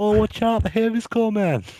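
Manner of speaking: high, put-on bad British accent. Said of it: "Please never, ever attempt that accent".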